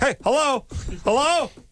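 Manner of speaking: uncertain, searching tone. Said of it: "when you do the phone thing".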